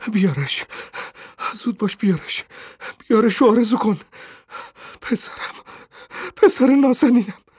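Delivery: very high breathless gasps, panting, broken halting phrases. Reading a story aloud, the woman speaks to the old man, panting, out of breath. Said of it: "زن نفس نفس زنان گفت".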